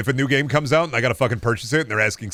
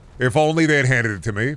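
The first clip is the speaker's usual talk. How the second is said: ordinary talk, nothing marked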